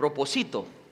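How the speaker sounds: propósito said without its stress.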